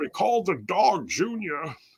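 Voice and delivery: slow drawl, pitch rolling. Answering a mock interview question: Sean Connery voice. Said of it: "I just broke into Sean Connery there".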